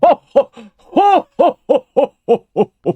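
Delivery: put-on jolly, hearty "ho ho ho" laugh. Performing a Santa laugh after being asked for one: put-on Santa laugh. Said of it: "let's get your best ho, ho, ho".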